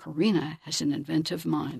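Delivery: plain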